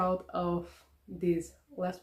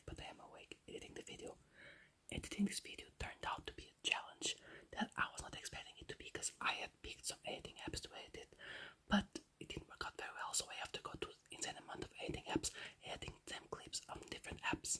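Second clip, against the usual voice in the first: hushed, very quiet whispered voice; 18 dB quieter than usual. Awake at four am editing a video while supposed to be asleep: whispering. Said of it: "I am whispering because I'm supposed to be asleep".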